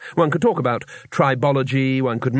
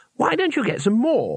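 sunny, bright, very high-pitched voice; 10 semitones higher than usual. A narrator reads Twoflower speaking to Cohen, bright.

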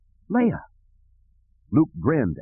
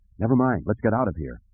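ordinary delivery

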